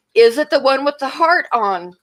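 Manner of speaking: mild calling out. Retelling a coworker calling out across a store: imitating someone yelling. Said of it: "yelling this across the store".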